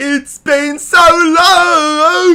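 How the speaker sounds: very high, loud, belted, stretched-out delivery. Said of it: "That's my [name]".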